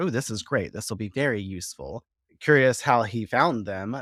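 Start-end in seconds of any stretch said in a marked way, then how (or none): none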